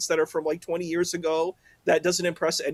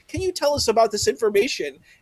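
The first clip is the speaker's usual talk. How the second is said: pointed, pitched-up, prosecutor-style tone; 6 semitones higher, 3 dB louder than usual. Retelling how the other speaker questioned a guest: imitating a prosecutor-like questioning. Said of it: "You sounded like a prosecutor".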